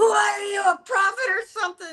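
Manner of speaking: mock shrill, very high, loud scream. Retelling how a man screamed at her, imitating someone screaming. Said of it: "he screams at me really loud".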